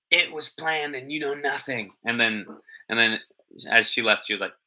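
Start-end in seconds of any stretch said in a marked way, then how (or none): 0.1-1.9 put-on whisper, higher pitched. Retelling what Erica whispered at the door: imitating Erica's whisper. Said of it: "you could hear her whispering".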